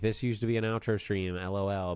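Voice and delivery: ordinary talk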